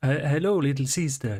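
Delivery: bad put-on Eastern European accent. Describing how people acknowledge a newcomer, the speaker attempts an Eastern European accent. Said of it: "in various uh, Eastern European accents".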